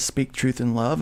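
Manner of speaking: ordinary talk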